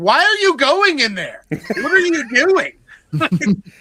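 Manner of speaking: very high-pitched, very loud shouting. Speaker retells him yelling at Jenna Ortega during a scary movie; imitating his yelling. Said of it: "he's yelling at Jenna Ortega like".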